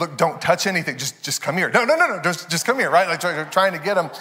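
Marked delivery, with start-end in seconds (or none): 0.0-2.9 put-on coaxing, pleading tone. Retelling a woman trying to coax a toddler, acting out a coaxing negotiation. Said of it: "trying to negotiate with him like a terrorist".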